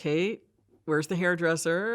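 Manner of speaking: plain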